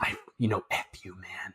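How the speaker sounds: very soft, quiet whispered jab. Acting out an imagined dinner scene where someone stares and whispers: imitating someone whispering.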